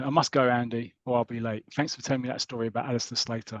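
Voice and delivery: ordinary talk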